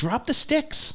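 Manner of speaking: acted-out very high-pitched cry. Recalling watching a hockey fight on TV, retelling a scream at the TV. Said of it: "And I'm screaming".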